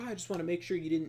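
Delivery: patronizing know-it-all tone. Retelling how a man answered the annoyed town workers, mocking a condescending tone. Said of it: "he said it in some like condescending way".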